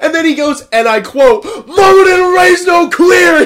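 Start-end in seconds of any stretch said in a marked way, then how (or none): 1.4-3.5 high-pitched, very loud screaming. Retelling how a big volunteer reacted to the scene: imitating a man screaming. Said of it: "Fucking screams at".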